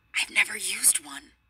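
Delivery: whispered voice. First-person narrator answering a question in a story, whispered. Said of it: "I whispered".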